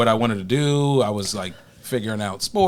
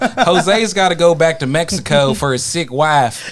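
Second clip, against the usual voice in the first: put-on Alabama accent, higher; 6 semitones higher, 5 dB louder than usual. Retelling what they said when they needed a manager, in an alabama accent. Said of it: "this is with an Alabama accent".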